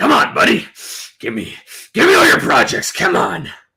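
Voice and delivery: loud, scruffy, evil villain voice. Speaker does a voice for Mister Deckerbus to guess: evil character voice. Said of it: "or an evil character".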